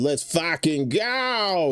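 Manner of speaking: put-on high, hyped Baltimore accent with "go" drawn out. Reading out a chat viewer's message: Baltimore accent. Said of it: "he said with his Baltimore accent".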